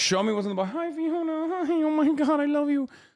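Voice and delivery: very high, squeaky, chattering voices. Retelling what stream viewers kept demanding: imitating chat viewers. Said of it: "Motherfuckers were like".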